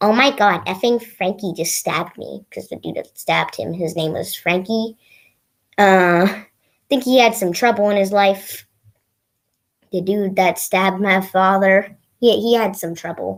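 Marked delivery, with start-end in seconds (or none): none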